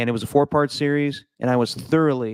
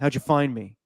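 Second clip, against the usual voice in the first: muffled disguised voice. Acting out a hidden documentary subject answering interviewers: muffled Dov Kleiman voice. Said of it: "And his voice is all muffled".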